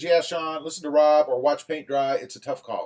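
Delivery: ordinary delivery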